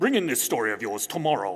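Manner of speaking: mock deep German accent. Retelling being told to bring in a story: Klaus's deep German accent. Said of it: "a deep German accent".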